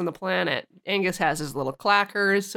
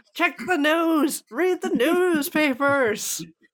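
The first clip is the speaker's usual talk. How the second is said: mock, pitched-up, shouted, yelled outburst; 8 semitones higher than usual. Describing a man on the phone, retelling a yell. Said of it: "And he yells".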